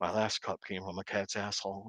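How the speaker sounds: low, flat, dead-level monotone. Retelling a scene's punchline in the character's voice: imitating Reacher's monotone. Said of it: "he just said it in his Reacher monotone".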